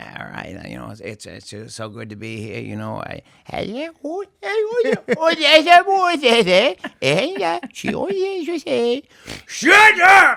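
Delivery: very high, loud, drawn-out, swooping rambling voice. Retelling a stand-up closer, doing an Adam Sandler impression. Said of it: "I had an impression of Sandler".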